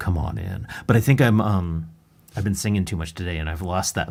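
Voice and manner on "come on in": very low, put-on seductive, sexy voice. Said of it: "That's the sexy part".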